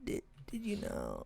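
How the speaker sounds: slow, hushed, very quiet, breathy whisper. Mimicking another speaker's question to tease them: imitating someone whispering. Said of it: "You're, like, whispering".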